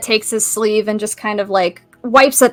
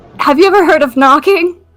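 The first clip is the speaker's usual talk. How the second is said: high, cracking, breaking voice; 6 semitones higher, 4 dB louder than usual. Voicing an upset character in a game: voice cracking. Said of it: "Does your voice crack a little".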